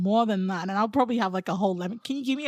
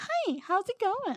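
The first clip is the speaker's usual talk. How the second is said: very high, forced cheery, fake-happy American accent; 11 semitones higher, 4 dB quieter than usual. Speaker mocking American accents she dislikes, in a fake-happy American accent. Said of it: "they sound fake happy".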